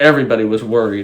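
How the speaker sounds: plain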